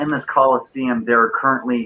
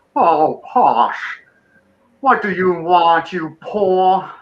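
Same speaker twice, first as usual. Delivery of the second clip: pompous, squonky fat dragon voice, pitched up; 7 semitones higher than usual. Speaker voices the pompous dragon character in the story: squonky pompous dragon voice. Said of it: "he's really squonky. And he goes".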